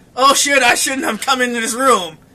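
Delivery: plain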